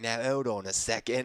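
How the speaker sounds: put-on movie-style British gangster accent. Speaker imitating a british gangster walking into a room, british gangster accent. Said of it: "That was my British accent".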